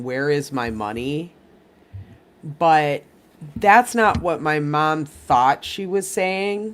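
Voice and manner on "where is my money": plain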